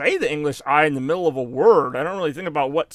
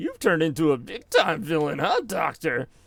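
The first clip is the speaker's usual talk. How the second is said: snarky, mocking, needling taunting tone. Quoting Sonic confronting Robotnik: imitating Sonic mocking. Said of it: "mocking him".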